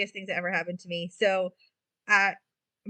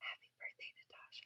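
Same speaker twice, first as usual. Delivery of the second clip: soft, breathy, hushed whisper. Retelling a demon creature creeping up from behind: imitating a whisper. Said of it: "and whispers in my ear".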